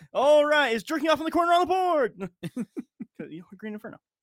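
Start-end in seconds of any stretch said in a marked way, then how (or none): 0.1-2.2 loud, high quiz show announcer voice. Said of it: "I'm gonna do my best, uh, announcer, uh, quiz show question guy".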